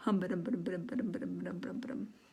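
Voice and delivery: soft, slurred mumbling. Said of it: "this is mumbling".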